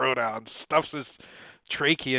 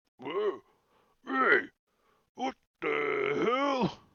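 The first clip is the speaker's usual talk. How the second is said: startled, surprised bugbear voice outburst; 4 semitones higher than usual. Storyteller voicing a bugbear reacting to a shout in Goblin, startled bugbear outburst. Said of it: "this bugbear is like".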